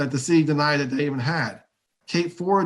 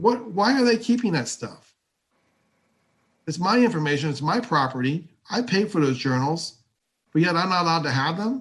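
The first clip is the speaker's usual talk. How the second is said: somewhat angry, aggrieved, wronged tone; 2 semitones higher than usual. Speaking about what the detectives have not told, sounding kind of angry. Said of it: "I know I sound kind of angry".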